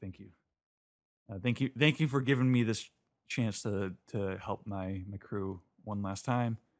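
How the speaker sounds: usual speaking voice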